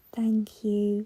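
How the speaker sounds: very quiet, soft, hushed, barely-there voice. A visitor looks at the narrator and thanks them in a real quiet voice. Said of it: "says in a real quiet voice".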